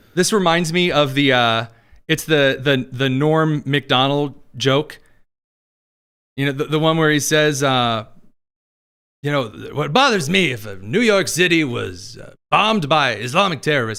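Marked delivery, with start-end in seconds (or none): 9.8-14.0 terrible, rough, bad put-on comic accent. Retelling a joke to another speaker: terrible Norm Macdonald accent. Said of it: "I know it's a terrible Norm accent".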